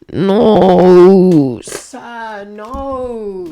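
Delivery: very loud grumbling with drawn-out "no". Responding to a guy who says he's too nice, grumbling into the microphone. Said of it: "[grumbles into microphone]".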